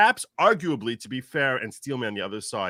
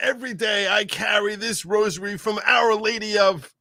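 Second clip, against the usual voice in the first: put-on old politician voice, higher pitch; 8 semitones higher, 3 dB louder than usual. Retelling a politician's speech about his rosary: imitating Joe Biden. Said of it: "He's like".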